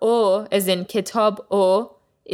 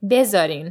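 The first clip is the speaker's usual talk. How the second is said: first syllable be of bezarin leaned on. Teaching a phrase and reminding the learner: stress on be of bezarin. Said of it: "you put the emphasis on the be sound".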